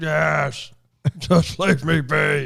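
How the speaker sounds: put-on monster voice. Retelling a man's reply when Jake Taffer checks on him, monster voice. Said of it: "monster voice wasn't a dead giveaway".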